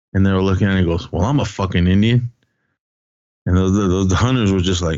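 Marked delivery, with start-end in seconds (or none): none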